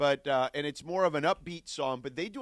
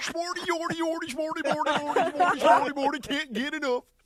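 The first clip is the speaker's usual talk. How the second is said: put-on puppet gibberish voice, higher and louder; 5 dB louder than usual. Imitating how another speaker just sounded: Swedish Chef-like gibberish. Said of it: "you kinda sounded like the Swedish chef there from The Muppets".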